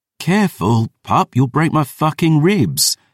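very high groan through the words. Lifted up in a fierce hug, the narrator speaks: groaning. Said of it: "I groaned".

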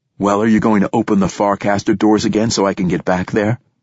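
plain reading voice

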